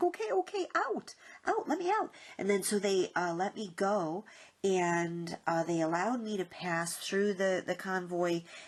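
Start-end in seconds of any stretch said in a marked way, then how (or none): 0.0-2.1 very high, panicked pleading. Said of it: "And I was like".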